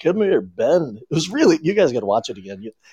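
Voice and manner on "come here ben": narrated voice-over style, like a movie narrator. Retelling how the movie's narration sounded: imitating Grizzly Adams' narrated voice. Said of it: "he'd be like".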